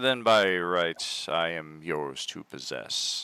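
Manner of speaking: defeated, resigned, given-up delivery. Voicing a sword telling the player it is theirs: defeated. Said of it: "that's very defeated in nature".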